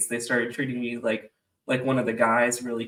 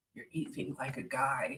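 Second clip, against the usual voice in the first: hushed, very quiet, murmured near-whisper; 12 dB quieter than usual. Retelling how a roommate leaned in and said something: imitating a quiet remark. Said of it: "really quietly goes".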